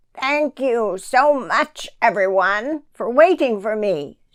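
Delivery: squawking, squawky little bird creature voice. Narrator reading the creature's words to the animals, with a squawk. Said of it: "said the creature with a squawk".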